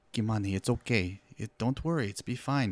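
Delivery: just a light hint of Spanish-speaking accent. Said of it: "just a very slight thing".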